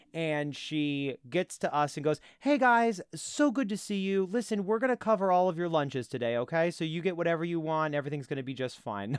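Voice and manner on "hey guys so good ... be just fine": put-on anxious voice, pitched-up and overly kind. Retelling how a distraught restaurant manager greeted the table: imitating a distraught manager forcing a smile. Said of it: "doing that kind of smile distraught where she's gonna be as kind as she can".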